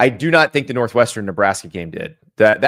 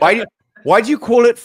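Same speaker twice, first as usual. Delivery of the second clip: put-on British accent, much higher pitch; 11 semitones higher, 3 dB louder than usual. Speaker joking with another speaker about explaining America to Europeans, in a British accent. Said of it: "I just did a British accent".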